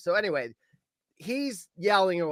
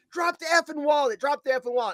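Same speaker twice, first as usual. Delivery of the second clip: mock, fast, high-pitched repeated yelling; 9 semitones higher than usual. Speaker, chasing a thief who stole a wallet, retelling a yell. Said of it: "I start yelling at him".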